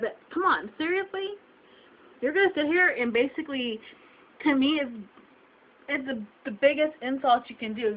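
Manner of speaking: upset, emotional, on the verge of crying. Speaking about being insulted over weight, emotional, close to tears. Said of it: "I'm getting emotional, and yeah, I'm kind of going to cry about it".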